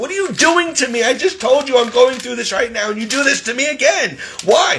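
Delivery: put-on yelling, acted out. Recounting a fight with a woman who reported them, retelling own past yelling. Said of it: "Stop yelling at me".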